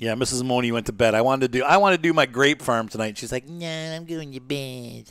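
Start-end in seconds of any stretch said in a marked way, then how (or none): 3.5-5.1 slow, unhurried, offhand put-on drawl. Retelling what Mrs. Moni said before going to bed, Mrs. Moni impression. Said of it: "That's my impression of her".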